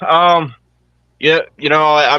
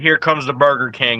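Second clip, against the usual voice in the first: usual speaking voice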